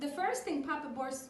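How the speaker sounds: ordinary delivery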